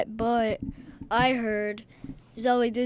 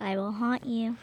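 creepy doll character voice; 5 dB quieter than usual. Voicing the evil doll inside an amulet: evil doll voice. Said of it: "evil doll inside of evil amulet".

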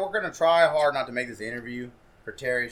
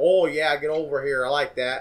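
put-on Pittsburgh accent; 2 semitones higher, 4 dB louder than usual. Showing how an accent he likes sounds: put-on Pittsburgh accent. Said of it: "I love the, um, like, Pittsburgh accent".

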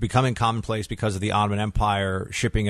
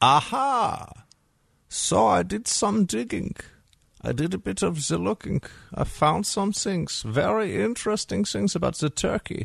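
put-on German accent, pitched very high; 10 semitones higher than usual. Talking to the audience in an Einstein German philosopher voice. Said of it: "got my Einstein German philosopher voice on".

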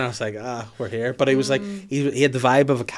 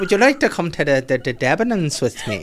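bad put-on Irish accent with swooping pitch; 4 semitones higher, 4 dB louder than usual. Retelling how he asked to go to prom, in a bad Irish accent. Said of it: "That's the worst Irish accent I've ever done".

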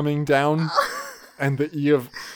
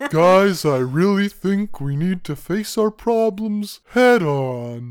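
slow, mopey, higher voice, on dragged out; 5 semitones higher, 4 dB louder than usual. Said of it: "mopey, like, Eeyore".

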